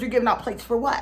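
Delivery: ordinary delivery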